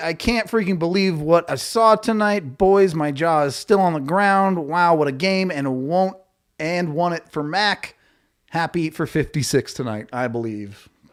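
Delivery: ordinary delivery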